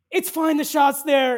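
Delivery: full-volume, very loud, high-pitched yell. Retelling yelling across a patio to a friend: retelling a yell. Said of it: "I yell to Taylor and I go".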